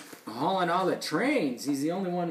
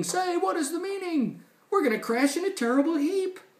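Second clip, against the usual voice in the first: very high, panicked screaming; 13 semitones higher than usual. Reading a story aloud, a train about to crash: screaming in panic. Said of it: "The train started screaming".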